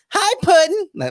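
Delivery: very high, very loud pushed-up falsetto. Explaining her voice sits near falsetto, attempting a falsetto Harley Quinn impression. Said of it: "her voice is in between the falsetto".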